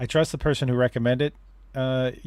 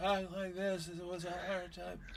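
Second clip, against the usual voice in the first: put-on very old man voice, much quieter, slower; 6 semitones higher, 17 dB quieter than usual. Telling another speaker his voice was hard to hear, in a very old man voice. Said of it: "I went like with a very old man voice".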